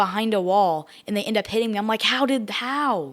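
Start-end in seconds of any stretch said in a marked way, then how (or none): 2.0-3.1 high blurt, full of disbelief. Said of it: "when you yell the word "how,"".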